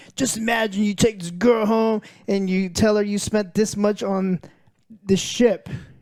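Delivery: very excited, hyped-up, drawn-out delivery. Retelling what a player said at a Star Citizen event: imitating someone super excited. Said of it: "super excited".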